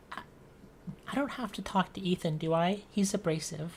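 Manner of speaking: soft, in-character half-whisper. Voicing a shy character asking about another, half-whispering in character. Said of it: "Eris kinda whispers".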